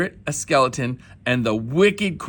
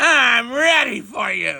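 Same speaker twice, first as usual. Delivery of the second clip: put-on gravelly, raspy old woman voice, a bit high; 9 semitones higher than usual. Narrator reads a story as old Miz McGrizz greets the cubs at her door, gravelly voice. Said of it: "She said in a gravely voice".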